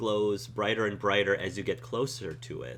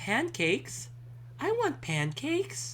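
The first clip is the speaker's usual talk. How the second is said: tiny, very high, swooping, sing-song creature voice. Retelling an episode, the speaker reads the creature's line to Forrest and Molly: small Cleffa voice. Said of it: "a small voice say Cleffa".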